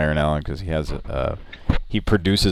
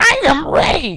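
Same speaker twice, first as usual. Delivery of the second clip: put-on frantic outburst, higher and louder; 7 dB louder than usual. Retelling a movie scene where a kid loses it: imitating Jason Hervey freaking out. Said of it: "Jason Hervey's losing his shit and going like".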